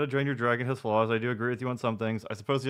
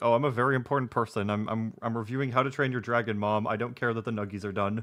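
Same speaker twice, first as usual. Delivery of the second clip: normal talking voice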